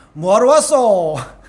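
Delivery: put-on Gyeongsang regional Korean accent. Recalling going to a shop back home, quoting the greeting: Gyeongsang dialect. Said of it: "경상도 사투리로 이야기하면".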